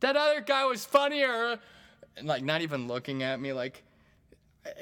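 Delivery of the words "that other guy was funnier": put-on loud drunken yell. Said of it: "just yelling stuff out".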